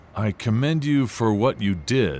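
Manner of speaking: very low, icy, frosty coolness. The coach answers the narrator, who left the race to help a girl, frostily. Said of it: "he said frostily".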